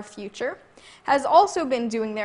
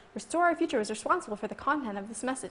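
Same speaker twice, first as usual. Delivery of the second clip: soft little voice, rattled off; 6 dB quieter than usual. Quoting the disclaimer at the end of an anti-Gingrich TV ad, really fast little voice. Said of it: "in a really fast little voice".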